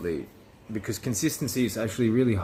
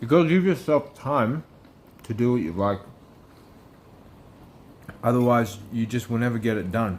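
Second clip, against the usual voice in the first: speaking with food in mouth; 2 semitones higher, 4 dB louder than usual. Sharing advice mid-meal, talking while eating. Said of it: "sorry, I'll stop eating".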